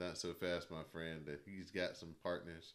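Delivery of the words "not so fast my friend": ordinary talk, nothing marked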